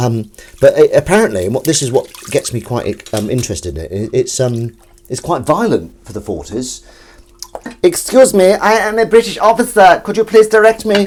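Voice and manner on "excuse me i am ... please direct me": squeaky, very high, loud put-on German accent. Showing an accent impression, in a high-pitched German accent. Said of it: "my German accent is a high pitch like that".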